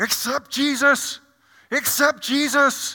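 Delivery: very high, slow, loud, drawn-out scream. Describing someone carrying a cross down the street: imitating a screaming cross-carrier. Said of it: "they're screaming out".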